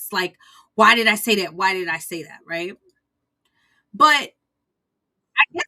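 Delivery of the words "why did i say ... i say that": put-on panicking voice, louder. Retelling how she reacted right after it slipped out: imitating someone panicking. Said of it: "She, like, panics".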